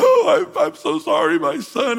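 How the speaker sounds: play-acted very high, loud, drawn-out crying-baby wail. Retelling Saul apologizing after David caught him: imitating Saul crying like a baby. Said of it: "And he cried like a baby".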